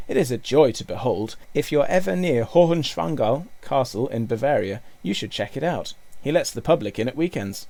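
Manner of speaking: plain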